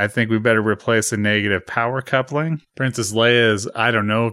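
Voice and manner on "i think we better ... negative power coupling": ordinary talk, nothing marked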